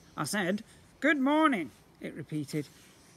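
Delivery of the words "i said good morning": posh, regal-sounding royal voice, swooping. A slime creature in the bathroom repeats its greeting to the boy, posh voice. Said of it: "it had a surprising posh voice".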